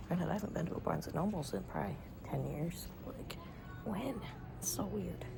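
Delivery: hushed, very quiet whisper. Inside a barnes and noble, remarking to viewers, whispering. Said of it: "I think I have to whisper in here".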